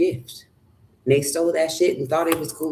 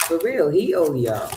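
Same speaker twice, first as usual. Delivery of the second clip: ordinary delivery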